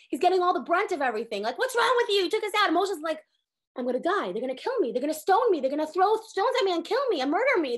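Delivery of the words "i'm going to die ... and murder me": desperate, panicked voice. Speaker retells the story of Moshe blamed by the community; acting out Moshe's panic. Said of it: "Moshe's in such a panic".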